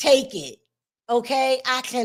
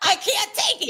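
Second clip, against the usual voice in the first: fed-up yelled outburst, kept small; 2 semitones higher than usual. Speaker venting that she cannot sit through the case any longer, yelling. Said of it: "Sorry for yelling".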